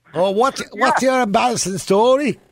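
nasal put-on Liverpool accent. Holding nose to do a caller's accent: nasal put-on Liverpool accent. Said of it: "if I hold me nose".

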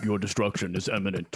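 deep, scary villain voice. Doing an impression of a villain announcing destruction: deep Darkseid voice. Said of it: "he would be deep like this".

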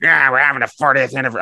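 put-on silly cartoon penguin voice. Quoting a newspaper columnist, done in a put-on penguin voice. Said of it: "I'm not sure why I'm doing a penguin voice".

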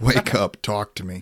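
plain

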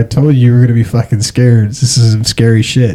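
ordinary talk

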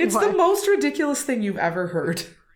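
words breaking into laughter. Telling another speaker a story, trying not to laugh: laughing while talking. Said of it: "I'm gonna start laughing".

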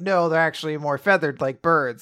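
ordinary delivery

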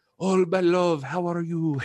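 put-on French accent. Retelling how her French family greeted her, French accent. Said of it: "being all French".

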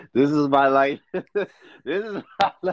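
ordinary talk, nothing marked

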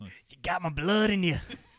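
put-on heavy, creepy Southern accent. Quoting a show character's line in an accent he didn't use; creepy Southern accent. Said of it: "he didn't say it in the creepy Southern accent. I just did".

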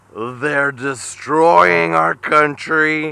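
put-on very slow, drunk-sounding, high-pitched, words dragged out. Describing how Trump sounds on YouTube clips: slow, drunk-sounding Donald Trump voice. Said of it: "and then on YouTube he's like".

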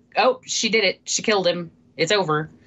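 ordinary delivery

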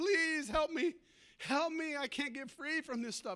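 tearful, weeping, heartfelt begging. A pastor retells a man begging him for help, retelling a weeping plea. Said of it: "he's just weeping and from his heart".

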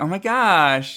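put-on high Valley Girl accent, gosh stretched out. Recalling an accent someone had to do, speaker does a Valley Girl accent. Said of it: "I think you had to do like the whole like Valley Girl thing".

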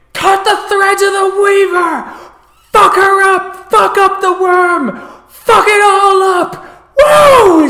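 very loud, very high-pitched shrieking scream. Narrator voicing Swift River running up to the DJ's mic, screaming into the mic. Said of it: "She screams that into the mic".

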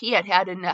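ordinary delivery

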